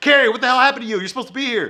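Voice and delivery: acted out, angry, pissed-off, very high-pitched voice. Retelling a TV plot, playing a character on the phone: imitating Miranda angry. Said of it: "Miranda's all pissed off".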